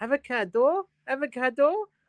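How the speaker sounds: very high Limerick Irish accent. Asked to say avocado, answering in a Limerick accent. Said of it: "That's the Limerick accent".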